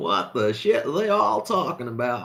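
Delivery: put-on American accent throughout. Speaker voices a man sitting there going on: american accent. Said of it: "with his American accent going".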